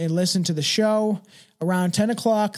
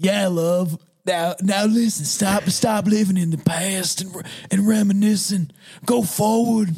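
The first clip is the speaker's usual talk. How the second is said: put-on old grandfather voice. Speaker asks how to do a grandpa voice, then tries it: grandpa voice. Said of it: "How can I do a grandpa voice?".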